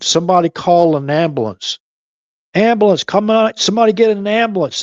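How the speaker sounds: put-on high-pitched screaming at the top of lungs. Describing a man in a photo who kept shouting for a medic, retelling a man's screaming. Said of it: "And then he started screaming".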